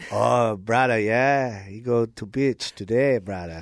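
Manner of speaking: put-on Hawaiian local character voice. Improvising a beach chat on request, the speaker plays someone in Hawaii: playing a Hawaiian local. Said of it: "I'll be a Hawaiian".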